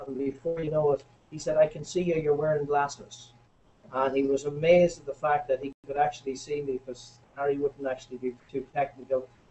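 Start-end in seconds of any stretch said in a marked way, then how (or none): none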